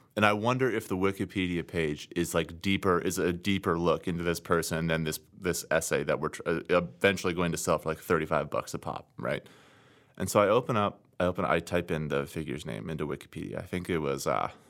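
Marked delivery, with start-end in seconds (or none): none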